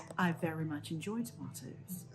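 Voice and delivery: put-on British accent. In a word game, saying the phrase one more time, in a british accent. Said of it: "say these words in a British accent".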